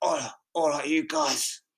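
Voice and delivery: put-on, casual south London accent. Podcast host imitates how a guest talks, imitating a South London accent. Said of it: "I don't know if it's South London or something".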